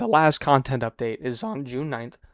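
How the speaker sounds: voice cracking. A speaker discussing the game's last content update, voice cracking. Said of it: "Excuse my voice cracks".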